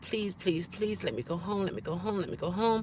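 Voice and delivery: mock insistent pleading, repeated over and over. Retelling begging a doctor to be let home: retelling begging and pleading. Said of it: "I still was begging and pleading".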